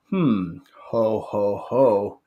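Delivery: every "ho" stretched out very slowly. Practicing a lead-in for a dad joke, doing the Santa laugh. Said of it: "the Santa laugh, the ho ho ho aspect".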